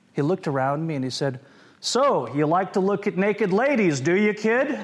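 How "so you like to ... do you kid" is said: play-acted big, loud, booming, pitched-up voice. Retelling what a sailor said to him as a kid, in a loud, booming voice. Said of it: "In a loud, booming voice".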